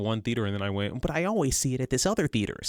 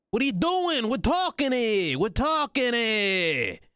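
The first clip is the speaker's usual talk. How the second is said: very high, slow, odd New York accent; 13 semitones higher, 3 dB louder than usual. Showing the accent done for a voice job: weird New Yorker-ish accent. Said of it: "weird New Yorker-ish accent".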